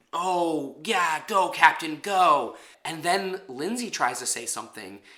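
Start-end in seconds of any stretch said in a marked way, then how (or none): 0.1-2.5 very slow, drawn-out, sarcastic tone. Retelling a contestant's taunt at a teammate: imitating sarcastic cheering.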